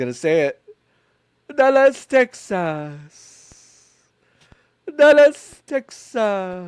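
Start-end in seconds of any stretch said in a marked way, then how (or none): 1.6-6.7 put-on very slow, drawn-out, high Italian accent. Act out how he says the name of the place, in an Italian accent. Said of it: "Italian accent".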